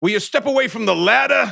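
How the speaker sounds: put-on clumsy, high, loud, poorly done Bronx accent. Speaker mocks an actor's movie line: Ben Kingsley's bad Bronx accent. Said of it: "trying like a Bronx accent".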